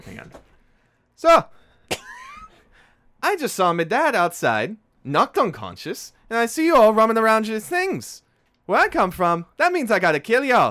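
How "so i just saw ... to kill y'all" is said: put-on high, loud tough young woman voice. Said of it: "I need to get her voice right here".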